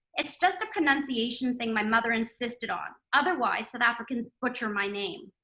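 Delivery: ordinary delivery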